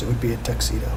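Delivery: plain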